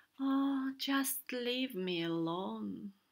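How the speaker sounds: with a sigh. A sad whale answers the doctor offering help, sighed. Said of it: "whale sighed".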